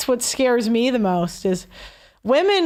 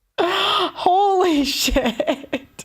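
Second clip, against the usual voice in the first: breaking into laughter, pitched up; 6 semitones higher than usual. Reacting to a story about a stalker, laughing. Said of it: "Sorry, I'm laughing".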